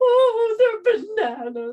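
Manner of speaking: very high, very loud, tearful sobbing wail. Retelling crying at a checkout over bananas: retelling crying. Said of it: "I burst into tears, started crying".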